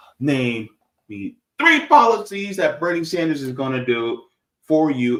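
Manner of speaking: ordinary talk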